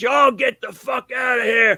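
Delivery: mock, high-pitched, screaming barkeeper voice. Retelling someone holding a shotgun overhead ordering everyone out: imitating someone yelling. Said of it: "he's yelling and screaming".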